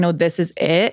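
ordinary delivery

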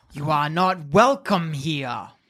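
serpentine hiss through the words, dragon voice. Narrating to players as a dwarf steps in, voicing the dragon: hissing dragon voice. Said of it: "it hisses".

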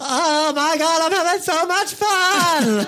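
very high, loud, over-the-top fake excitement. Speaker shows how he fakes enjoyment when not enjoying himself: fake over-the-top excitement. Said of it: "I falsify enjoyment by being like".

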